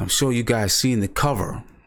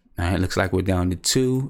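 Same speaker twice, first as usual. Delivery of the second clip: normal talking voice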